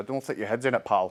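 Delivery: put-on Scottish accent, laid broad. Retelling what Laurie said at football: Laurie's broad Scottish accent. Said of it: "in his broad Scottish accent and said".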